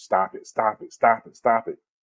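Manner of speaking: usual speaking voice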